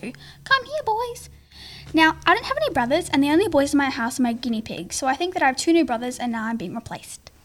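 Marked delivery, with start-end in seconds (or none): 0.0-1.3 put-on very high, soft baby talk. Retelling parents calling for runaway guinea pigs, in a baby voice. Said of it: "saying in a baby voice that you would usually talk to a dog".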